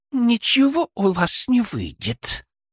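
very high, slow hiss squeezed through clenched teeth. Borisova, caught out, straightens up and answers, through gritted teeth. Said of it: "процедила она сквозь зубы".

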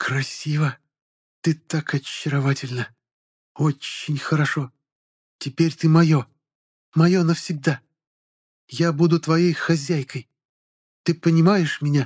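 high, hissed, broken, barely intelligible speech. An albino woman leans over the narrator as he comes to; hissed, barely intelligible speech. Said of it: "прошипела на едва понятном человеческом языке".

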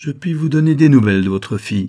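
derisive jeering. A narrator reads the baron's reply to the stunned marquis, in a mocking tone. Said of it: "reprit le baron d'un ton railleur".

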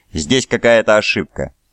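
plain reading voice

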